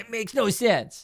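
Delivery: put-on high, cranky, grumpy old man grumbling. Describing a picture of a party-pooper figure: imitating an angry grumpy old guy. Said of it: "this angry, grumpy old guy going".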